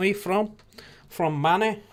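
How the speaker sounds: Manchester accent. The speaker shows off their manchester accent to the others. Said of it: "That's my Manchester accent".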